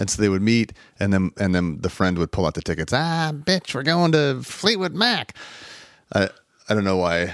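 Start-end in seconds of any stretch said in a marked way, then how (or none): 2.9-5.4 high, slow, drawn-out comedian-style drawl. Retelling a friend's surprise reveal of concert tickets: Katt Williams voice. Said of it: "I did that in, like, Katt Williams' voice".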